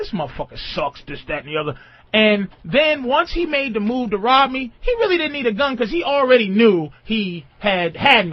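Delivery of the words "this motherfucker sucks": lower, quieter mutter under the breath. Retelling what a robber said before robbing him: imitating someone muttering under his breath. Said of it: "saying shit under his breath".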